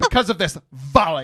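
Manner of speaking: put-on valley-girl voice. Teasing the other speaker by copying how he said a word: imitating the other speaker's delivery. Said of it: "That's exactly how you said it".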